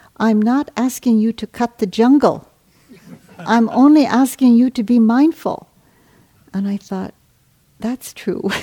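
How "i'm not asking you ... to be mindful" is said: put-on loud, impatient, admonishing delivery in an Indian accent. Retelling what a man said when he admonished him, Indian accent. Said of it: "in his beautiful indian accent".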